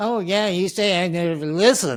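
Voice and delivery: sarcastic and hostile. Showing how not to answer someone who says you never listen, sarcastic and hostile. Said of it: "it's sarcastic and hostile".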